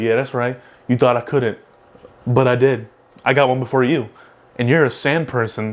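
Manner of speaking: ordinary talk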